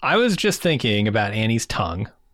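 normal talking voice

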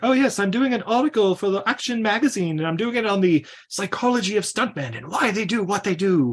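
put-on poor British accent. Retelling what a woman in a van said, in a put-on british accent. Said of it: "She kind of has a British accent".

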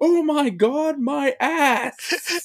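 shrill, very high, full-volume top-of-lungs yell. Telling how a man reacted after biting the chicken, shouting at the top of his lungs. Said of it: "he just shouts at the top of his lungs".

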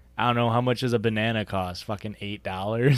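normal talking voice

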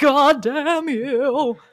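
put-on loud, grumpy, cranky old-man voice, cursing. Imagining an angry ghost woken from his tomb: George McKenzie as grumpy old man. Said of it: "a grumpy old man".

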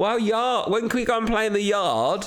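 put-on American accent, very high pitched. Acting out what a girl said after watching a kids' show, imitating her American accent. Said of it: "What is she, an American?".

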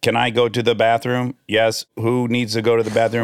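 ordinary delivery

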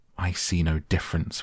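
plain reading voice

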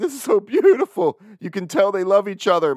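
weepy, sobbing, teary crying gush. Retelling sitting at the last wedding he attended, imitating his own crying. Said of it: "I'm sitting there crying like".

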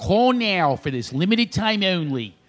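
put-on very slow, drawn-out Philadelphia accent, advert voice. Showing how to do a Philadelphia accent by quoting a commercial, Mummers commercial Philadelphia accent. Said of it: "how to do a Philadelphia accent".

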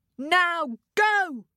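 bold, commanding shout. Reading a story aloud, Ted sends his tiger away, shouted. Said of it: "Shouted Ted".

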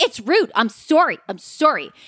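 slow, drawn-out, irritated, hangry tone. Retelling a scene, imitating Ramona as she complains: imitating hangry Ramona. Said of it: "she's so freaking hangry".

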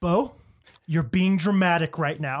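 put-on stern, scolding tone. Retelling how she talks to a crying baby: imitating a partner scolding a baby. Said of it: "And she's like".

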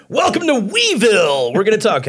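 very high, loud, sweeping, swooping announcer voice. Podcast host welcomes listeners back after a digression, in an announcer voice. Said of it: "I'm going to stop with my announcer voice".

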